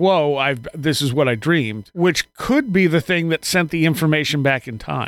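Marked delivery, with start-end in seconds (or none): none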